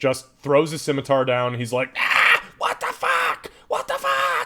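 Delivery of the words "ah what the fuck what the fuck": very high, frantic, panicked goblin yelp. Voicing a goblin who drops his scimitar and runs: goblin screaming in panic. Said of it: "literally screaming".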